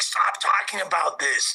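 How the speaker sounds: put-on desperate, begging voice. Retelling how Brick begged people not to talk about it: imitating Brick's desperate pleading. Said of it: "the desperation in his voice".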